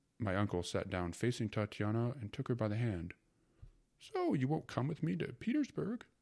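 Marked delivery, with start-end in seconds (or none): 4.0-6.0 spoken through a laugh, high and swooping. The uncle, sitting across from a woman and holding her hand, asks her, laughing. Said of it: "he laughed".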